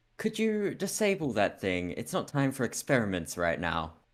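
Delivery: posh upper-class voice with swooping pitch. Player speaks in character to Benton during the game, in a posh voice. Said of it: "I say in my my like posh voice".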